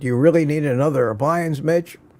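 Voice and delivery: ordinary talk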